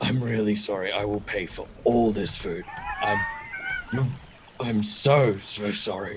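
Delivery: quick, hushed whisper. Playing a scene, looking aggressive but secretly speaking to another character: whispered apology. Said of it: "but actually whisper to Maureen".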